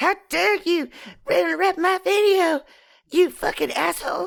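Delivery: bratty, cartoonish, pushed way up. Expected to do an impression, the speaker ends up with a Cartman-like voice. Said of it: "That's just you doing Cartman".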